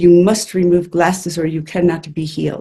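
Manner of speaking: put-on strict, stern German accent. Retelling what an instructor said at a meditation: imitating a strict German accent. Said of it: "she had this very strict German accent".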